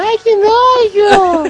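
imitated high girl's scream. Retelling a little girl on a bus, imitating her screaming. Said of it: "ouvi uma garotinha gritando".

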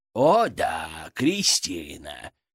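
very low, biting, swooping, caustic sarcastic drawl. A narrator reads another character answering the narrator's thought, caustic drawl. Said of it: "язвительно протянул Фырк".

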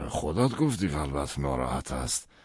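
ordinary delivery

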